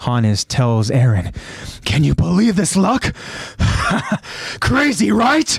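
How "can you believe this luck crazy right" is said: high crazy gloating with laughter. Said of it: "laughing as he does it".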